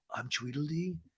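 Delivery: barely audible, hushed, very quiet half-whisper. Retelling a line one person half-whispered to another: imitating a half-whisper. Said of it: "whispers to Katie".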